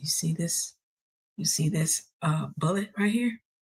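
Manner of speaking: very low, deep voice, sunk way down. Retelling what a man said after pulling a bullet from his pocket; low voice. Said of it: "he had this real kind of low voice".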